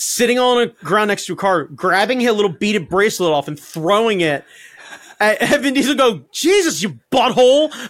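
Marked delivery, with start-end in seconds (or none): 6.3-7.7 mock fed-up, exasperated, pissed-off tone. Retelling a movie scene where Jason Momoa throws a bracelet: imitating a pissed-off Jason Momoa. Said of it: "seeing Jason Momoa be pissed off".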